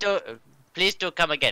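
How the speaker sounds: put-on mixed German and Indian accent. Welcoming a new viewer to the stream, in a German-Indian accent. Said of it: "I'm doing a German Indian accent".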